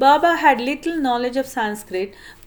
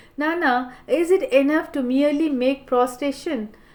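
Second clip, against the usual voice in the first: usual speaking voice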